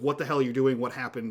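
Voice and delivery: ordinary delivery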